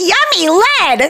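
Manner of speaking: high, slow, mock delighted childish voice.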